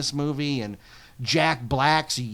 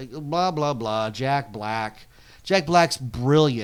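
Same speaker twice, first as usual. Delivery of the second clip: ordinary delivery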